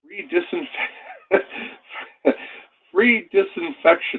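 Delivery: high voice, laughing through the words. Reporting free disinfection offered with Canadian warranty servicing, the speaker is laughing while speaking. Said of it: "I'm sorry for laughing".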